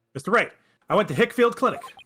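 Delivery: high-pitched, very loud, eager blurting.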